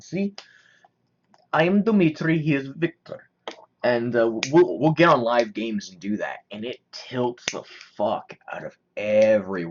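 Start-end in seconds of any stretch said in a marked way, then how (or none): 0.0-3.3 very bad, clumsy Russian accent, pitched up. Explaining the joke he and another kid do in live games: very bad Russian accent as Dmitri. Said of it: "do a very bad Russian accent".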